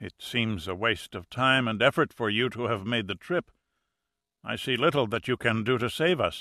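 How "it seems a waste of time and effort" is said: usual speaking voice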